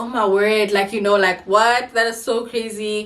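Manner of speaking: normal talking voice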